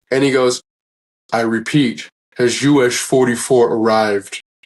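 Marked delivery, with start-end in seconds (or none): 1.3-4.4 deep, slow, drawn-out grumble. Retelling what Dolph Lundgren said from the cryo chamber: deep grumbling voice. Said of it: "this deep grumbling voice".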